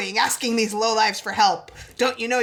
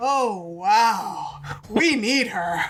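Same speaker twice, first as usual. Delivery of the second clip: put-on orgasmic-sounding character voice. Recapping a scene and quoting a character's line, Adora's orgasmic tone, imitated. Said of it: "in a tone of voice that suggests she just had a mind-blowing orgasm".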